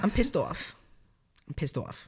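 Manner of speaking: put-on Long Island-accented speech. Speaker demonstrates how she talks when angry at work, in a Long Island accent. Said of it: "You get like a Long Island accent".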